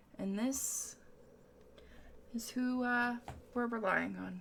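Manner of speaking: mock muttering under the breath. Retelling what a man said under his breath, re-enacting an under-breath mutter. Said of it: "Under his breath".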